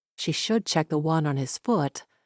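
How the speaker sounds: ordinary delivery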